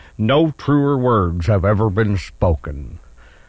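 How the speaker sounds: very slow, low put-on newsman voice, every word dragged. Opening a weekend rewind segment with a Walter Cronkite impression. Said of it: "That was supposed to be Walter Cronkite, but it didn't sound like him".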